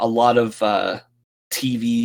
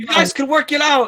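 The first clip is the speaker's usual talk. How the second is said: shouting, higher. Voicing security guards chasing a player character: security guards yelling. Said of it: "yelling out".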